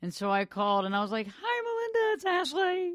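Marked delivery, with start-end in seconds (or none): 1.3-2.9 squeaky forced voice, very high and slow. Retelling a phone call to a friend: imitating own raised high voice. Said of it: "I kinda sound like Kermit on that".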